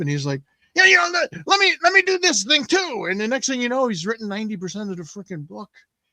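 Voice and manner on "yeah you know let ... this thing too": very high, swooping, animated, pumped-up eager voice. Retelling how a co-writer got pumped up and asked for more: imitating an excited friend. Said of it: "you can see him getting all pumped up".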